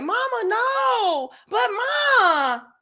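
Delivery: put-on very slow, high, pleading child's voice. Describing children whose father showed up, imitate the babies pleading. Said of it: "those babies ble- begging and pleading".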